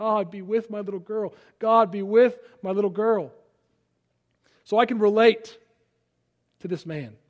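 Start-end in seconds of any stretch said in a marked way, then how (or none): 0.0-3.3 acted-out sobbing, tearful voice. Recounting driving down to their daughter, re-enacting own prayer: retelling a sobbing prayer. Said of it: "I'm just sobbing".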